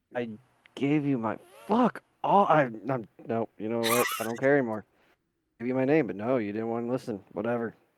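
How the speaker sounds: irritable mumbling and grumbling. Playing a character who repeats his name: mumbling in a pissy mood. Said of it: "Just mumbling the entire time in a pissy mood".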